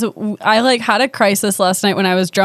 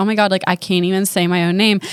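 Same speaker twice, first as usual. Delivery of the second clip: usual speaking voice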